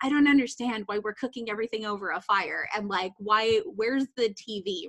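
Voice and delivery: ordinary talk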